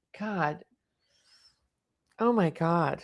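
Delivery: hushed, emotional, overcome, close to crying. Speaker reacting to something upsetting they are watching: emotional, near tears. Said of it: "I'm sorry. I just get emotional".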